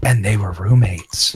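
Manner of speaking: whispering. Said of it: "Please don't say it with that tone of voice".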